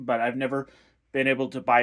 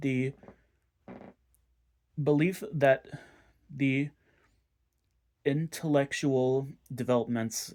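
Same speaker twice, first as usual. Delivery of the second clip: reading aloud, much slower; 4 dB quieter than usual. Speaker reading a long passage aloud from a text: reading slowly. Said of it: "I'm sorry if I'm reading so slowly".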